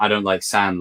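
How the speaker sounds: ordinary talk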